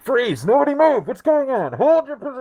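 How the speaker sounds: very high, swooping, barking shouts. Voicing guards who run in on the group: guards shouting orders. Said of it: "everyone's, like, shouting".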